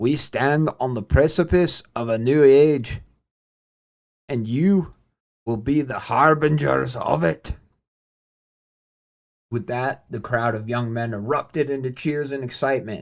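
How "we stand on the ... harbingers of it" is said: put-on Scottish accent in an army sergeant's voice. Narrator voicing a scottish sergeant addressing a crowd of young men, scottish accent. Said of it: "I'm gonna do my best to keep the accent going".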